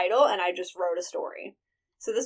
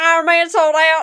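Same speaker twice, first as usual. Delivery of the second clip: put-on very loud, high Southern accent holler; 8 semitones higher, 12 dB louder than usual. Yelling to a passing man and his two sons while getting in the car; southern accent. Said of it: "I yell out in a southern accent".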